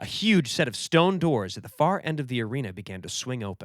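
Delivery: ordinary delivery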